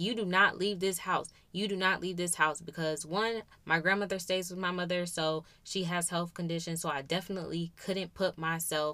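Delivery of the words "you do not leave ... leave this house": normal talking voice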